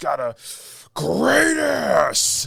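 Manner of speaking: enraged, rough, rising full yell. Describing a movie scene to the listener, imitating Al Pacino's enraged yell. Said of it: "yells at the guy".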